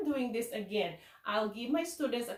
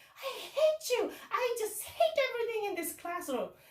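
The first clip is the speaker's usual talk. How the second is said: acted, shrill, furious child voice, pitched way up; 11 semitones higher than usual. A teacher recalls a student's outburst while teaching: imitating an angry child. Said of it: "he was so mad".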